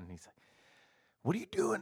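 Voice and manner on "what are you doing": play-acted, very high-pitched shouting. Retelling a cop at an inspection stop: imitating a cop yelling. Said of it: "He's all yelling".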